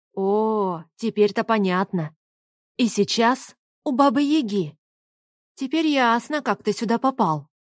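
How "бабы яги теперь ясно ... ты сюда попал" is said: plain reading voice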